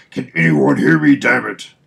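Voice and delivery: barked out, loud and rough. Reading a comic aloud, Batman calling over the radio: Batman voice. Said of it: "That's what Batman sounds like".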